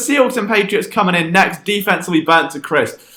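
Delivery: ordinary delivery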